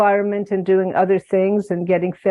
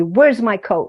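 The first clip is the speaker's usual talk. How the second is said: mock-angry, put-on angry tone. Retelling what she said to me one day, imitating an angry demand. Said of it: "Very angry".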